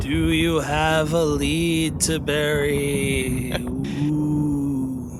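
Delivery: eerie, haunting ghost voice, drawn-out ooh. A co-host asks a Halloween question on the show, spooky ghost voice. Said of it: "was my ghost voice".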